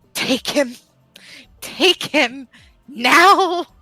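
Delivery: livid, drawn-out delivery. Voicing a character who shoves someone into another's arms: livid. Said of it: "look fucking livid".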